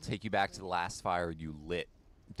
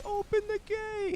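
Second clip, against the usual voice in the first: put-on calling out, much higher, slower. The speaker imitates the guy who calls out from the drawbridge: drawbridge guard calling out. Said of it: "the guy who goes".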